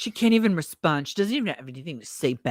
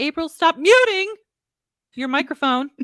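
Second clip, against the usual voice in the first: very high, shrill, loud, mock-angry fake-mad tone; 11 semitones higher, 6 dB louder than usual. Showing how they would sound if genuinely mad at April: pretend mad scolding. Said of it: "if I was genuinely mad at you and I was like".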